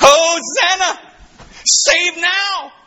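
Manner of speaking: joyful, high, slow shouted cry.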